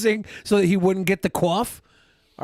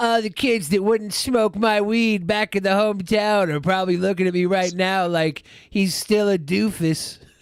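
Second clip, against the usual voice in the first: play-acted, smug, self-satisfied, proud tone. Mocking a speaker on stage as smugly proud: smug Nick impression. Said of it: "He's so smugly proud of his achievements".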